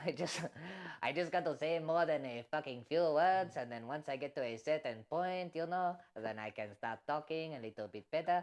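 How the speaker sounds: speaking in put-on Mexican accent. Speaker shows a friend he can keep up an accent, Mexican accent. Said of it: "you sound like a Mexican".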